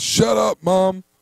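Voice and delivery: put-on yelling.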